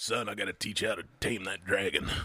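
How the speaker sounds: put-on old man's voice with a touch of rasp. Quoting the tv producer who taught him the tricks: slightly raspy old voice. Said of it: "Did he have a raspy old voice?".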